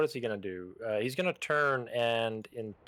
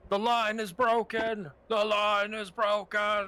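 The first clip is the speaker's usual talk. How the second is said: very high battle cry at full lungs; 10 semitones higher, 3 dB louder than usual. A tabletop player voices his character calling out in a fight, loud call at top of lungs. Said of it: "call out like in a loud voice".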